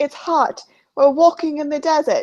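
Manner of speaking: put-on poor British-meets-Australian accent. Retelling how Jarvis complains in the desert, do Jarvis in a really bad British-meets-Australian accent. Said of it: "really bad British meets Australian accent".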